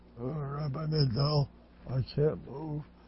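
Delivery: weak, soft, slow, feeble complaining voice. Retelling a sick man's words on the phone to the rabbi, imitating a weak complaint. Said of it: "sick man complains weakly".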